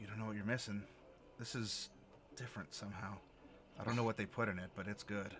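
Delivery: muttering under breath. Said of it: "under his breath in Infernal".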